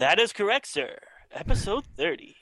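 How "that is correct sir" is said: high, swooping, showy character voice. Opening an episode in a new way: Ed McMahon voice. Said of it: "Little Ed McMahonish".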